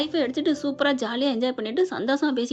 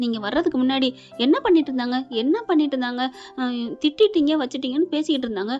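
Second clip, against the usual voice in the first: ordinary talk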